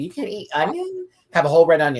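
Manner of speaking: disbelieving, pitched high.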